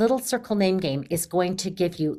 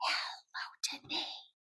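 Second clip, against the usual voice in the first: very quiet, hushed, breathy whisper. Showing how the class greets a child by name, using a whisper voice. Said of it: "So I used a quiet voice or a whisper voice".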